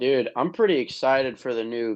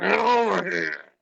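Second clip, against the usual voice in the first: strained, high-pitched gurgled delivery; 9 semitones higher, 3 dB louder than usual. Retelling how the actor playing Scorpion said his line: imitating Scorpion's gurgled line. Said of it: "he just gurgled".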